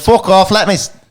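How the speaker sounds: mock Scottish accent shifting to Irish. Retelling what a fighter told the booing crowd: Casey O'Neill Scottish accent slipping Irish. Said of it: "I'm going back Irish".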